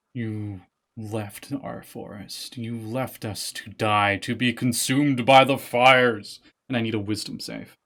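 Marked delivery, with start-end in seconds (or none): 0.2-6.4 darker, ominous, foreboding voice, very slow. Voicing a statue speaking in a second voice: darker, more foreboding voice. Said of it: "a darker, more foreboding voice".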